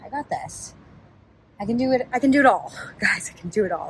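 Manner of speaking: out of breath and panting. Talking to viewers on camera, out of breath. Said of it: "As I'm like out of breath".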